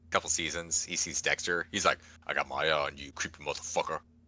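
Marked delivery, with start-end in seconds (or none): 2.2-4.0 surly, low, gruff cop voice. Quoting what the detective says every time he sees Dexter: gruff Detective Doakes impression. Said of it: "he's gruff".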